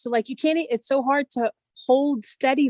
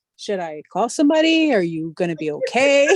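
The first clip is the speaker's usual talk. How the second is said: put-on composed, easygoing, low, unbothered concern; 4 semitones lower than usual. Retelling a man's reaction during a deal, imitating a calm voice. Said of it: "because he was so calm".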